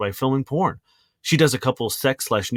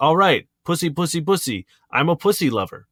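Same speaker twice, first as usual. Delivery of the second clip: put-on yelling voice, higher; 3 semitones higher than usual. Speaker acts out an imagined quote from a man, imitating Nacho yelling. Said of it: "I can imagine him yelling".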